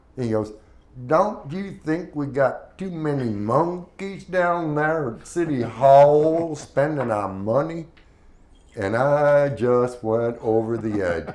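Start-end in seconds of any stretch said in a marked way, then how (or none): 1.1-7.9 put-on nasty, drawn-out drawl in an old voice. Retelling a regular caller on a call-in show, imitating an old man's nasty drawl. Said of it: "with the nastiest drawl".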